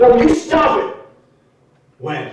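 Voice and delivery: angry. Pressed about when he first swept them off their feet, answering angry. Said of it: "I know you're angry".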